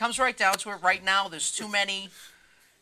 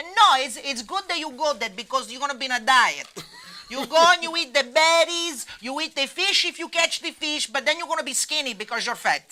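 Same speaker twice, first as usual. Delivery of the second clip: put-on raised, higher-pitched voice with Italian accent; 6 semitones higher, 5 dB louder than usual. Asked how their mother would answer, imitating mother's italian accent. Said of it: "How would your mother answer this question in her accent".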